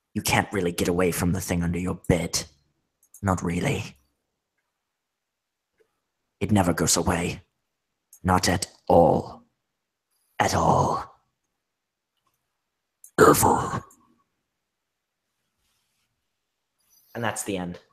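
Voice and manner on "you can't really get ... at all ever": rough, throat-straining put-on zombie monster voice. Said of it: "since I've used the Zambi voice".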